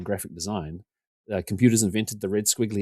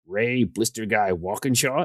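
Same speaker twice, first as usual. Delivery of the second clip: clumsy, overdone, bad put-on American accent. Retelling what a man said on coming up to him, worst American accent. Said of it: "you'll have to forgive the worst American accent you're ever about to hear".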